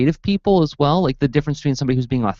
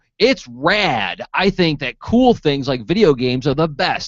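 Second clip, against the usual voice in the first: slow, fake, trying-too-hard hip modern kid voice. Voicing a character in a made-up comic: fake modern kid voice. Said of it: "trying too hard to sound like a modern kid".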